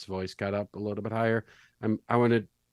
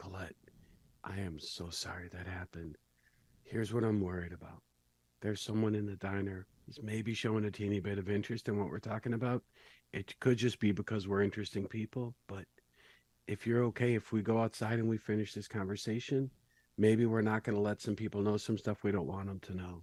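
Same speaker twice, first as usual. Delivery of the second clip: voice lowered just a touch, soft; 8 dB quieter than usual. Speaking to Colette in a diner while someone watches: slightly lowered voice. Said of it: "I'm gonna lower my voice just a teeny bit".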